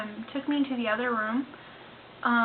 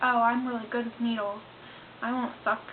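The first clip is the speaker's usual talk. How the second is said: normal talking voice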